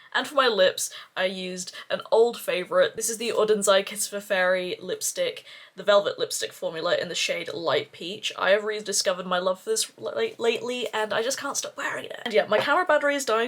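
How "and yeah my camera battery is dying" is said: a little fast, rushed, hurried talk. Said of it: "so I'm talking a little bit fast".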